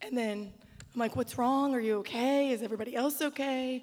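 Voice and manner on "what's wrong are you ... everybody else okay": mock worried, anxious tone. Retelling finding him weeping and asking what happened, retelling worried questions. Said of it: "She thought someone died".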